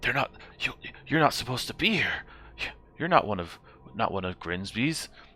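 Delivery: jittery, nervous goblin voice, stammering, tripping over words. Voicing a goblin who sees the other adventurers: nervous goblin voice. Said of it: "he looks back to your friends and immediately is getting nervous".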